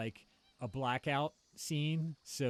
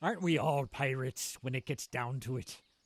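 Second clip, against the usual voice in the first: deliberately bad put-on pirate accent; 3 dB louder than usual. After hearing everyone must talk like pirates, the speaker tries a bad pirate accent. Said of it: "That was the worst pirate accent ever".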